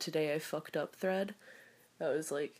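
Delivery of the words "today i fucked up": usual speaking voice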